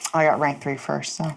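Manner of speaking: said under one's breath. Speaking in character to another player: muttered under breath. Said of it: "I say under my breath".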